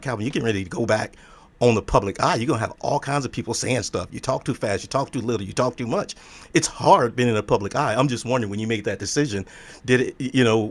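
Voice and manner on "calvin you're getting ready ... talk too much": ordinary talk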